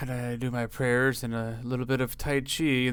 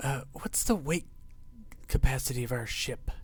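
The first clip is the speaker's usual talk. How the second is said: slow whisper under the breath; 6 dB quieter than usual. Whispering a question to Warland about the ship: whispering in character. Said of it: "I'm gonna whisper over to Warland".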